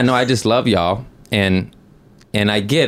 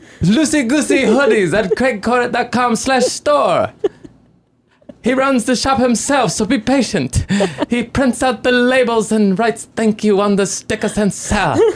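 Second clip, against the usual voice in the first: put-on sophisticated, intelligent voice, higher pitch; 14 semitones higher than usual. Plugging hoodies when asked to use the voice: put-on intelligent voice. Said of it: "say the sweatshirts with the voice".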